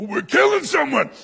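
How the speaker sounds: gleeful dog voice, very high and rough. Retelling how the dog reacted to a man being shoved: voicing Bear the dog, all happy. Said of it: "he got all happy and all fangs".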